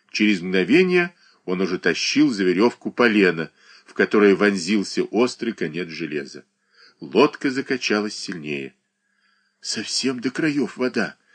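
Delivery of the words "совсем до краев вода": soft, frightened, mumbled mutter. A boy in a rocking boat speaks to an old man, in a frightened mutter. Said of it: "испуганно пробормотал мальчуган".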